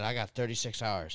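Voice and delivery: ordinary talk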